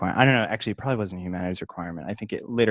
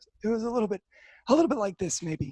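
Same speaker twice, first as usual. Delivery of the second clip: very high, rasping, raspy voice; 13 semitones higher than usual. Speaker imitates a man who repeated a saying every class, raspy voice. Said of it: "he did kind of have a raspy voice".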